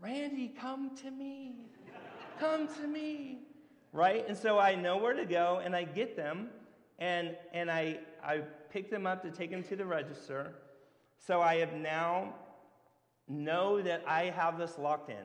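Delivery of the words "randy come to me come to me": tiny voices, very high-pitched and slow. Retelling hearing voices call in the store: little voices calling. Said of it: "I hear these little voices".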